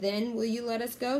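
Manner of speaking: ordinary delivery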